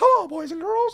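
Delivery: very high, loud, squeaky light falsetto. Recapping a falsetto lesson for listeners: Mickey Mouse voice. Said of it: "kind of like you're talking like Mickey Mouse".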